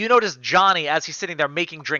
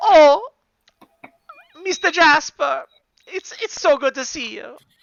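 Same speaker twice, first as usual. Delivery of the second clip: sobbing while talking, much higher and louder; 12 semitones higher, 4 dB louder than usual. In an improv bar scene, greeting Mr. Jasper while blubbering. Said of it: "what's with the blubbering".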